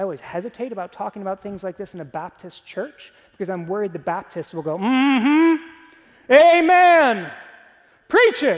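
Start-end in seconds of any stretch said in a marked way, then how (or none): 4.8-8.6 very loud, very slow high yell, amen stretched. Speaker in a Baptist church imitating the congregation's responses, imitating congregants yelling. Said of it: "I'm yelling".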